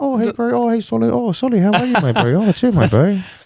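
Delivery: gentle, very high-pitched, friendly voice. Describing how Samoan and Tongan people talk, imitating high-pitched soft speech. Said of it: "it's all high pitched and quite softly spoken".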